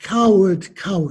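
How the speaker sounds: ordinary delivery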